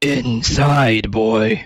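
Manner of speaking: overly low gurgly voice. Trying out an imitation of a bass baritone voice, too-low throaty imitation. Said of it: "that's that's that's too low".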